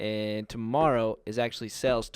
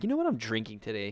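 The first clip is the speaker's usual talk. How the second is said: usual speaking voice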